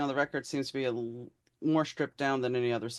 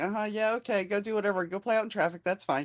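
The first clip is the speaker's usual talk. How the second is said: mock absent-minded, distracted brush-off, pitched up; 7 semitones higher than usual. Imitating parents who tune their kids out: imitating a tuned-out parent. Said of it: "They kinda just tune you out".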